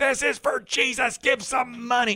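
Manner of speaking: piercing, very high, shrill screaming. Retelling how a woman outside asked passersby for money: imitating a woman screaming. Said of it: "She was screaming".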